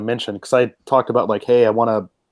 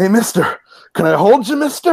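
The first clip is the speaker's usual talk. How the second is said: put-on voice of an aging old war veteran; 10 semitones higher, 4 dB louder than usual. Retelling a game encounter, imitating an old war vet asking for money. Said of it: "he's like".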